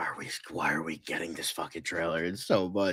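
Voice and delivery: mock fed-up, exasperated, annoyed grumbling. Retelling another friend's complaint about a trailer: imitating an annoyed friend. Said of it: "started to get annoyed by the Speak No Evil trailer".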